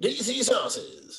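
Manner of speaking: very high-pitched commercial ad announcer voice. Asked to do an ad read as the Monster Jam commercial narrator; Monster Jam ad narrator voice. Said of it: "as the commercial narrator for Monster Truck".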